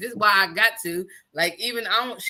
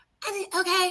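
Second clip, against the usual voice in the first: mock unbothered nonchalant tone, higher; 10 semitones higher than usual. Imitating a daughter answering about the open back door: imitating a nonchalant reply. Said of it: "so nonchalant".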